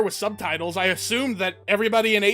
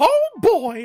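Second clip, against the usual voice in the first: squeaked out high, loud and badly; 8 semitones higher, 6 dB louder than usual. Showing a Mickey Mouse impression after saying it's decent: Mickey Mouse voice. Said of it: "It's comedic because it's not a good Mickey".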